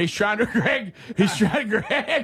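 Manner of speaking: breaking into laughter and giggling mid-sentence.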